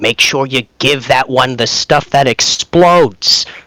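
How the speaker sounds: loud theatrical whisper. Whispering in character to Wheeljack about explosives: loud stage whisper. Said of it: "I lean over and whisper to him".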